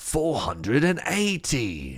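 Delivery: tennis umpire-style announcer call. Saying a number the way it was first imagined: put-on tennis voice. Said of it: "I also thought about it in the tennis voice".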